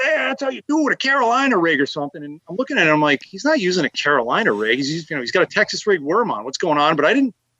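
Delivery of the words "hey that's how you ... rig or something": mock high, cocky, loudmouth shouted brag. Recounting a nearby angler yelling at them unprompted, mock-boastful taunt. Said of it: "he's running his mouth".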